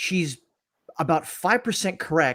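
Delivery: plain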